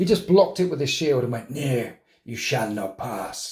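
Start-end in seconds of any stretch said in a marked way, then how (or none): 1.5-3.5 put-on low, slow, weird stoner drawl. Voicing a miniature blocking a blow: weird guy smoking too much. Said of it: "He talks like that, which is like a weird guy who's smoking too much".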